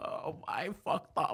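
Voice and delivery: very quiet, breathy, put-on drunk voice, lamenting. Describing someone getting the call, imitating a drunk guy. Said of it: "it's just a drunk guy that's like".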